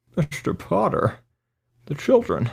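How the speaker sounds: very high, slow drawl. Answering with another It's a Wonderful Life line: Jimmy Stewart impression sounding like Sean Connery. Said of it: "like Sean Connery is, like, trying to impersonate Jimmy Stewart".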